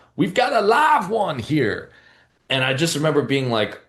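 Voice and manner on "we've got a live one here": very high, slow, swooping southern drawl. Retelling how Bradford pointed at the speaker, imitating Bradford's southern drawl. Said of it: "he said in his southern drawl".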